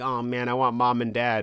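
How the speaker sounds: mopey, gloomy, down-in-the-dumps, sorry-for-himself tone. Retelling a story character's wish for his parents: imitating a mopey, gloomy character. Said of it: "all mopey and gloomy".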